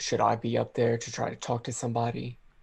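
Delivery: loud theatrical stage whisper, aside. A player asks whether to go up and talk to somebody, stage whisper. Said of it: "Stage whisper".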